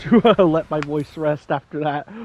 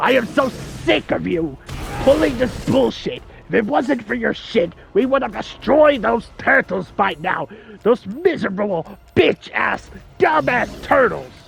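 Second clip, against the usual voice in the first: rough, pitched-up, high villain ranting voice; 6 semitones higher than usual. Doing a bit about the turtles in character, Shredder voice. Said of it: "The Shredder voice".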